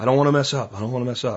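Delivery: mimicked, barely audible mutter under breath. Recalling a kid rolling a tarp, retelling a muttered aside. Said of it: "almost under his breath, but loud enough to hear".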